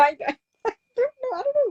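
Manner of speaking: high, giggly speech broken up by laughter. Reacting to another speaker's point on the economy, laughing while talking. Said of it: "I can't stop laughing at that".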